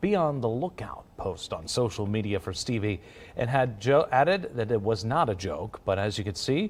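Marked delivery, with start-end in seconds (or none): none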